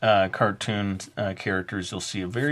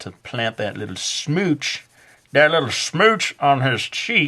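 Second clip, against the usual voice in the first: fake Southern US accent, pitched up; 5 semitones higher, 4 dB louder than usual. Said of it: "am I doing, like, a Southern accent?".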